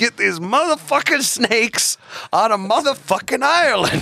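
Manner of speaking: very high-pitched, tough action-movie tough-guy voice. Imagining a movie line for Saint Patrick: Samuel L. Jackson voice. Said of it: "a movie with Samuel L. Jackson as, as Saint Patrick".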